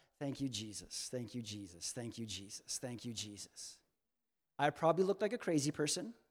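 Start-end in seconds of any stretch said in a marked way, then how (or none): 0.2-3.8 put-on under-breath mutter, lower and quieter. Retelling walking to the car, imitating own under-breath muttering. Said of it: "I am saying under my breath".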